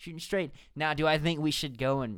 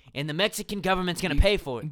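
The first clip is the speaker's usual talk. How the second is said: usual speaking voice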